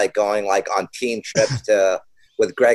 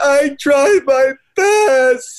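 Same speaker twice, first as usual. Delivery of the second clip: very high, loud, very slow, stretched crying wail; 5 dB louder than usual. Retelling what they would say when they were crying: imitating past crying. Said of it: "when we'd be crying".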